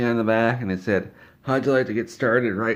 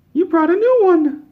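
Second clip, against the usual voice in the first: put-on British kid accent, higher and louder; 8 dB louder than usual. Retelling what the kids said on his arrival: imitating British kids. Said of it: "'cause they're British kids".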